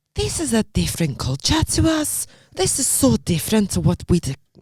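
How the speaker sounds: put-on Scottish woman accent, wandering, drifting Polish. Retelling what a woman from Scotland asked: imitating a Scottish woman. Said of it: "she's a bit Polish now".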